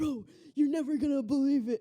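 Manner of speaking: mock thrilled, eager, excited, bursting blurt. Retelling an excited friend's FaceTime call: imitating Ellie, excited. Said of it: "Ellie gets really excited".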